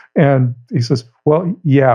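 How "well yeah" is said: doubtful, hesitant, unconvinced tone. Retelling the caller's second answer: imitating an uncertain answer. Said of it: "he's not as certain this time when he answers".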